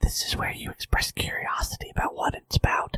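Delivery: hushed, soft whisper. Prompting the other speaker to ask about the interview: whispering. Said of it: "You can't understand me when I'm whispering".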